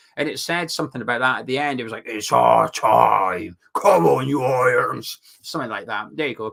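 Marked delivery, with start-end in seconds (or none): 2.1-5.2 loud, very slow, rough, drawn-out voiceover voice. Imitating a promotional video voiceover for fans: Ray Winstone voice. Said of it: "There's my Ray Winston impression".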